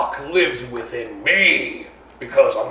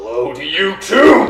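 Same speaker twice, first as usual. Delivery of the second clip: slow, swooping, dragged-out angry yell; 3 semitones higher, 4 dB louder than usual. Voicing a sword answering a player's hello: yelling. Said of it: "why are you yelling?".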